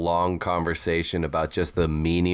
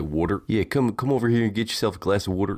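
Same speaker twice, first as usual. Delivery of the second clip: mock Maryland accent, pitched higher; 3 semitones higher than usual. Mocking how people from Maryland say water: imitating a Maryland accent. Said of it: "I hate the way they say wa-, uh, water".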